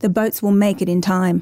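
ordinary delivery, nothing marked

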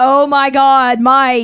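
loud, slow surprised shout.

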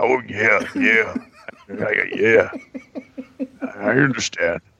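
swooping, soothing wrestler-style voice. Imagining a grief counselor who sounds like Randy Savage: Randy Savage voice. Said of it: "would be Randy Macho Man Savage's".

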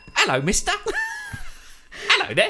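put-on very high, sing-song little street-urchin child voice. Asked to show the orphan voice in a bit, orphan child voice. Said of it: "Orphan voice".

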